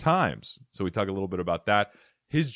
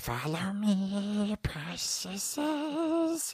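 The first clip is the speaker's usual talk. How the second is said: very high, eerie creature voice, "me" stretched out; 12 semitones higher, 6 dB quieter than usual. A podcast host says the line again to make it creepier, in Gollum voice. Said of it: "in the voice of Smeagol or Gollum".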